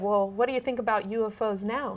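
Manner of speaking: ordinary delivery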